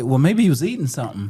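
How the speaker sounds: ordinary talk, nothing marked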